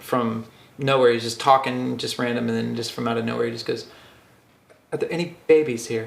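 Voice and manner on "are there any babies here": put-on German accent. Retelling a comedy bit where the comedian asks the crowd: Rory Scovel German accent. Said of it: "he's out in his German accent".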